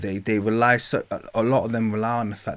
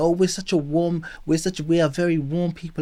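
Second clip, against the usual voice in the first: high-pitched, self-praising boastful tone; 8 semitones higher than usual. Retelling what people say to seem friendly: imitating Egyptians claiming warmth. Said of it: "that's what they love saying".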